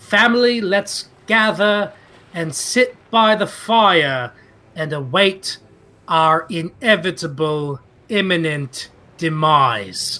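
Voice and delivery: loud high-pitched shout. As Burbage, calling the family together, very loud. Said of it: "Burbage will say very loudly".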